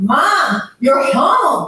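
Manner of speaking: speaking up. Demonstrating a reply to Mom, who keeps saying she must go home: raised voice. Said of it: "Increased voice".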